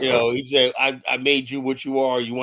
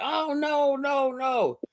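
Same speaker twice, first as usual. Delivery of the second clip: acted, very high, very slow, drawn-out crying wail; 13 semitones higher, 3 dB quieter than usual. Retelling a movie ending where the man was killed: imitating someone crying.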